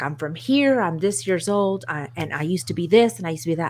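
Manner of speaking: ordinary talk, nothing marked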